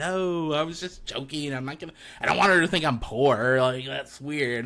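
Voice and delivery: ordinary delivery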